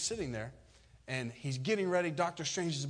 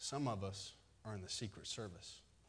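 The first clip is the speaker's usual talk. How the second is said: very quiet, hushed, confiding murmur; 6 semitones lower, 10 dB quieter than usual. Telling a joke, a man leans over to the pastor: imitating someone speaking quietly. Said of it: "he leans over to the pastor real quiet".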